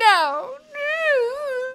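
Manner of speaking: put-on pouty child voice, high-pitched. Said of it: "she just keeps going".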